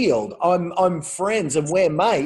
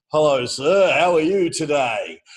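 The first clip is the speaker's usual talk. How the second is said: oily, smooth, slick salesman voice. A salesman approaches a buyer in a Lamborghini showroom: imitating a slick salesman. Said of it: "a slick salesman comes up and says".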